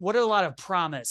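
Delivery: ordinary talk, nothing marked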